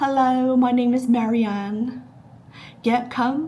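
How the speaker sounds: high, loud, put-on British accent. Pretending to film a Vogue get-ready video: put-on British accent. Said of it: "a Britishy accent".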